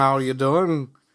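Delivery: spoken in a Liverpool accent. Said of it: "They talk like the Beatles".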